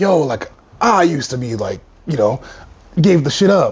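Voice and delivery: raspy put-on old-head voice, seasoned and rough. Imitating someone in their forties telling old stories: imitating a raspy older man. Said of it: "I don't know why I'm putting this fucking rasp on it".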